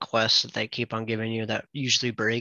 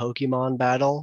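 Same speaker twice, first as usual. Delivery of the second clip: usual speaking voice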